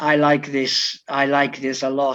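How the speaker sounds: put-on Croatian-accented speech. Retell what a player told you, his coach, amid the wall of noise, imitating a real heavy Croatian accent. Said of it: "the real heavy Crow accent he had".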